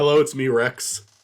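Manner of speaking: put-on dog voice. Introducing a dog as a co-host: voicing the dog Rex. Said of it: "Rex is now the third co-host 'cause Michael can't introduce himself".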